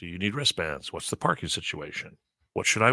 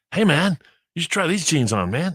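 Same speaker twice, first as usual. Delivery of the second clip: high, loud, over-keen eager salesman voice; 9 semitones higher, 7 dB louder than usual. Retelling what an overeager salesman in a store said: imitating an overenthusiastic salesman. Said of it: "little Johnny Enthusiasm".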